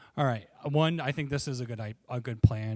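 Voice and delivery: yelling. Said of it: "so I'm gonna keep yelling at you".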